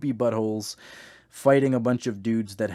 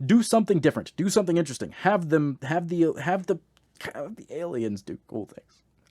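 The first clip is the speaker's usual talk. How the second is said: normal talking voice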